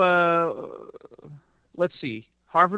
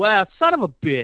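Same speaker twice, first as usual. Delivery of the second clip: put-on Philadelphia street accent. Imagining a listener in Philly reacting to the book, the speaker uses a Philly accent. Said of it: "That's a pretty good Philly accent".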